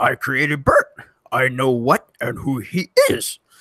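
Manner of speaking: swooping, sing-song wise sage creature voice. Challenged to take a crack at it after another person's bad try, read the line in a Yoda voice. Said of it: "Read this line as Yoda right here".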